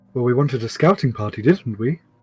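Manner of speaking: put-on weird upper-class English accent. A character in the game speaks in a weird posh English voice. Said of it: "turned like a really weird posh English person".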